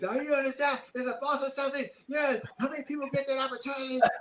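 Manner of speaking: mock furious coach voice, very high, ranting. Recounting what his coach said on coming over; retelling an angry coach. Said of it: "And he was so pissed".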